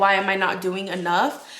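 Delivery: plain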